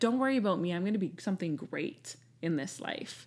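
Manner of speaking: quiet, dry, deadpan tone. Telling how she answered a woman who pitied her, retelling a deadpan reply. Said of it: "I looked at her deadpan".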